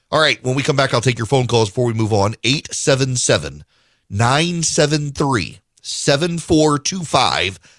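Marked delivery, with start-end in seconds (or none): 2.4-7.5 slow, deliberate, spaced-out delivery. Host giving out the call-in phone number to listeners, slow, deliberate pace. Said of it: "I say it at that pace".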